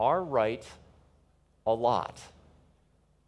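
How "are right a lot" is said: slow, with long pauses between words. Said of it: "I'll try to say it slowly and several times".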